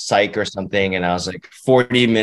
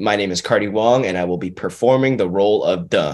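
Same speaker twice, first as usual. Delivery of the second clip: normal talking voice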